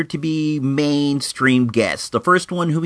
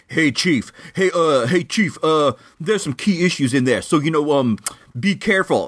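put-on Brooklyn accent, friendly tone. Retelling what a seller at a comic show said: imitating a Brooklyn accent. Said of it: "dude had a Brooklyn accent".

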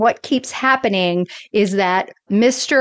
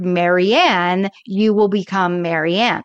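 normal talking voice

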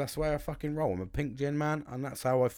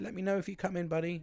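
mock hesitant, unsure, tentative, pitched up; 6 semitones higher, 4 dB quieter than usual. Retelling a friend's message about golf: imitating a friend asking tentatively. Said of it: "He does say it a bit tentatively".

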